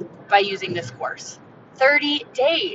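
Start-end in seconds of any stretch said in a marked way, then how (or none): 1.7-2.8 "thirty days" stressed, slow and high.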